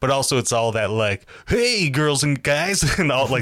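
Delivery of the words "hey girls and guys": odd, high-pitched, drawn-out radio DJ cadence. Imitating a man who copies the way DJs greet listeners: weird radio DJ cadence. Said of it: "really weird cadence that the DJs would use".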